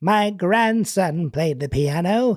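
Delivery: put-on slow, elderly old lady voice. A speaker demonstrates the go-to line for doing voices: grandmother voice. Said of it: "To say anything as a grandmother".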